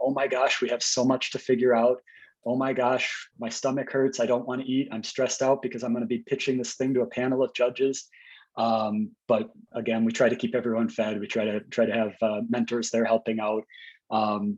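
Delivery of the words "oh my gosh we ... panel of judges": normal talking voice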